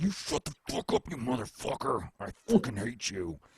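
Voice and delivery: booming, raging, furious, shrill, very loud screamed outburst. Retelling how opponents online reacted to his trolling: imitating furious gamers yelling. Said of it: "you wouldn't believe how crazy people got".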